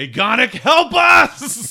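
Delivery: very loud, shrill, high-pitched shout. Player turning their head to the sky and calling for help, shouting loudly. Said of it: "I just shout loudly".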